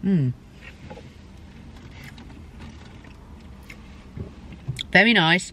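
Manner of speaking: soft, breathy talk while chewing, mouth stuffed full. Taste-testing turkey and trimmings, speaking with mouth full. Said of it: "I'm going to have a big mouthful of turkey now".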